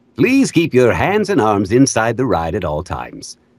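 put-on theme-park announcer voice. Comparing a speech to ride announcements, in a Disney ride announcer voice. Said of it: "That reminds me of like a Disney voice".

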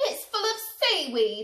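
loud, high-pitched shouting. Narrator reads a character finding what is in the opened sack, shouting. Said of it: "shouted Len".

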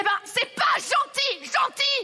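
high, loud, slow, reproachful shouting.

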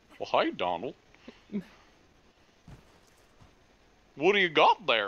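swooping-pitch southern cartoon dog voice. Asked to practice a specific cartoon voice, speaker tries mimicking it: Goofy voice. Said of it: "listen to it a little bit and try to mimic".

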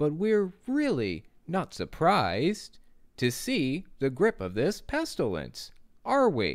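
exaggerated, overdone sing-song preaching cadence. Imitating how a Jehovah's Witness speaker talks: exaggerated Jehovah's Witness speaker cadence. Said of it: "That cadence, I'm trying to exaggerate it so that you can pick up on it".

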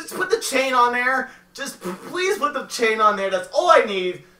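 loud, very high, frantic freaking-out yell. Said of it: "I actually thought you were yelling at me".

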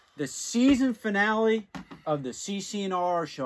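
loud, high, showy show-host voice.

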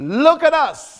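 put-on firm commanding voice. Retelling a story, quoting one man's firm, commanding words to another. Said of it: "in that firm, commanding voice".

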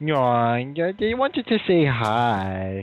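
goofy made-up character voice, drawn-out "hi". Speaker passes a greeting to the other speaker in a silly put-on voice. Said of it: "every time you start doing that voice".

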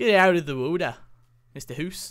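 bad, failed attempted Canadian accent. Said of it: "That's not even a Canadian accent".

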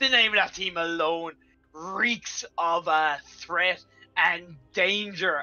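heavily sarcastic tone, dripping with sarcasm. Announcing an upcoming matchup, speaker remarks on a team name in heavily sarcastic tone. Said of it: "I say with the most sarcastic tone possible".

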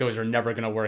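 ordinary talk

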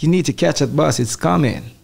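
fake, unconvincing put-on American accent. Answering a request for an American accent: put-on American accent. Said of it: "give us an American accent".

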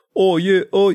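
put-on very high New Zealand accent. Imitating Kieran who just left the call: imitating Kieran, New Zealand accent. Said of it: "that's New Zealand".

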